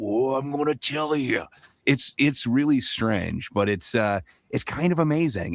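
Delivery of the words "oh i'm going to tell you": toned-down, dialed-back macho wrestler voice. Describing a guy holding shop who does Randy Savage, Randy Savage voice. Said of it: "he does this macho man Randy Savage, but only about sixty percent".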